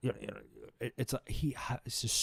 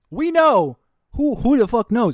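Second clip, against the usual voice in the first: very loud, full-on, swooping shouting; 11 semitones higher, 12 dB louder than usual. In a conversation with others, yelling. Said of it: "I'm yelling. I'm sorry".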